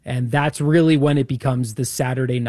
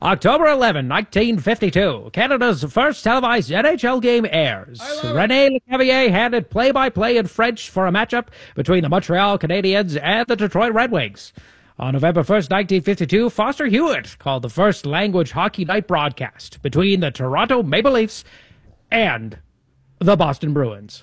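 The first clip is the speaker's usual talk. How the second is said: put-on old-timey radio announcer voice, pitched higher; 7 semitones higher than usual. Reading out a bit of hockey broadcast history, old-timey radio voice. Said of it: "do you want me to do the next bit in the old-timey radio voice".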